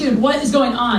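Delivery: ordinary delivery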